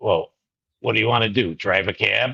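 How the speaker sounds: put-on grizzled old man voice, talking down, condescending. Retelling the dean's reply to a request to switch majors, imitating a grizzled old man. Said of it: "He was an old grizzled guy".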